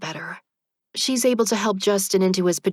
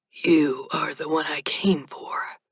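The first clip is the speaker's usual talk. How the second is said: dry, sandpapery, rasping, level voice; 4 semitones lower than usual. Reading a story where a strange young man answers: dry, sandpapery voice. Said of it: "in a dry, sandpapery voice".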